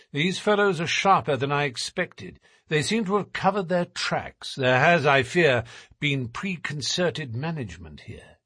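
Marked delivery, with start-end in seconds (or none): none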